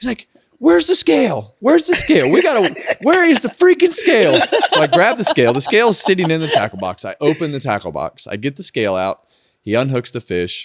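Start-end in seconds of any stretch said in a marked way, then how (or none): 0.6-4.4 frantic screaming, very high-pitched and loud. Retelling the angler's frantic hunt for the scale: imitating someone yelling. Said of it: "screaming and yelling".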